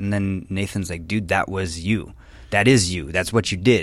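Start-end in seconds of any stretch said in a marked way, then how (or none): none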